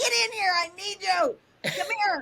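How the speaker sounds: high-pitched screaming. Retelling screaming at Jenny to come in and help, retelling a scream. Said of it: "screaming at Jenny".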